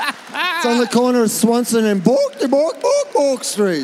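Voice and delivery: high-pitched, swinging sing-song. Teasing the other speaker about how they said a street name: Swedish Chef voice. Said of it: "You said it like you were the Swedish chef from the Muppets".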